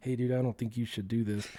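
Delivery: soft, hushed half-whisper. Retelling a brother's warning before riding down the hill: imitating a half-whisper. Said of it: "kinda whispering to me".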